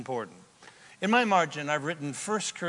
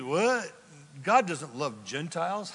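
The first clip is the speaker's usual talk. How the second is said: usual speaking voice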